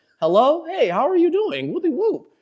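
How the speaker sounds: very high, all-proper telephone voice. Retelling mom answering a phone call, quoting her: imitating mom's proper phone voice. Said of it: "She starts sounding like all proper and shit".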